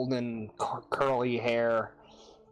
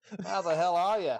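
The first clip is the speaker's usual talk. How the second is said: matey put-on Australian accent, pitched up; 6 semitones higher than usual. The speaker greets another person, switching into an Australian accent.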